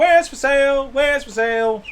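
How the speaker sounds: very high-pitched, drawn-out, slow yell. Describing Reggie running out to a stall and calling out, Reggie yelling at the stall. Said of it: "you see him kind of just yelling out like".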